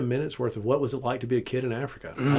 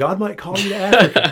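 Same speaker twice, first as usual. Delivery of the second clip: fearful, ominous, raised tone; 7 semitones higher, 7 dB louder than usual. Mimicking how fearful people phrase God's call, in a mock-scared ominous tone. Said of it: "they'd almost say it like this, you know, ... like it scares you".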